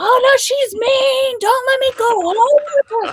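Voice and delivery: very high-pitched, screaming put-on yell. Recalling a man coming out of anesthesia shouting at nurses: imitating a man yelling. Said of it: "Yelling and screaming like".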